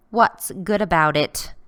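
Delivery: snarled delivery. A woman answers a man's good-morning greeting from the driveway, snarling. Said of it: "she snarls".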